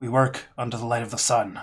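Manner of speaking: gruff voice calling out loudly.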